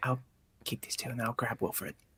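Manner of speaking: speaking in a whisper. Saying they'll grab wilfred while the other gets set up: whispering. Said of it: "I'm whispering".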